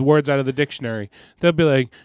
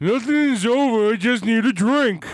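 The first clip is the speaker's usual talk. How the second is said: put-on New York Italian-American accent, higher pitch; 9 semitones higher than usual. Doing a Stallone impression for the others: Sylvester Stallone impression. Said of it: "I can do a good Stallone".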